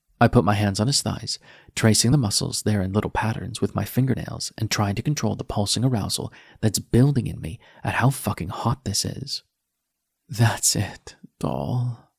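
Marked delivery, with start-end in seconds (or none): 10.3-12.0 soft whisper, words barely voiced. Reading a love scene aloud, a character encouraging a partner: whispering. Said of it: "I whisper".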